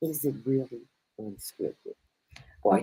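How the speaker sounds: soft, hushed half-whisper. Asking the other speaker to tell her on the side, half-whispering. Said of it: "why am I whispering to you?".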